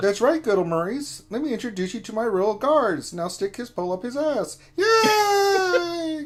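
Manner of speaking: high squeaky voice with "yay" stretched out. Answering a viewer's request to introduce Darth Kermit: Darth Kermit voice. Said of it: "how Kermit got a little gangster".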